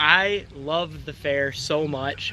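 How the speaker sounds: very drawn-out, slow, heavily sarcastic drawl. Asked how they feel about the fair, answering really sarcastic. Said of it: "and I'm being really sarcastic".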